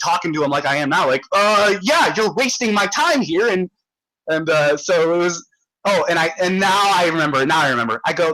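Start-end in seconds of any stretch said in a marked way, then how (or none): 1.8-3.5 acted, heated, emotional, worked-up rant, pitched up. Retelling what they told him after being assaulted, retelling getting emotional. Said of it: "I was getting like a fucking emotional".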